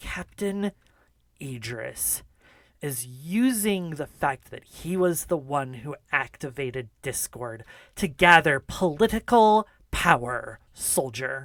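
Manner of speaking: seething, angry, hissing voice. Voicing the general scolding a soldier about a captain: hissing angry general. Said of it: "the general hisses and says".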